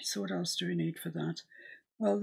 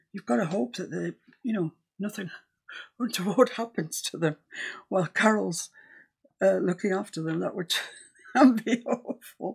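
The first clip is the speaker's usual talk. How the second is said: loud, talking while laughing through words; 6 dB louder than usual. Chatting during a painting session, addressing Carol, laughing while talking. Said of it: "I don't know why I'm laughing about it".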